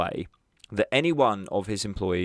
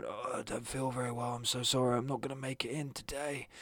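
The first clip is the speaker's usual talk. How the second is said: hushed, very soft, put-on sick voice; 4 semitones higher, 11 dB quieter than usual. Calling in to work, the speaker demonstrates putting on their best sick voice. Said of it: "putting on your best sick voice".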